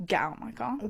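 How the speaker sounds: put-on disgusted tone. Retelling how he ordered the speaker out of his car: imitating a disgusted tone. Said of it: "looked at me with disgust".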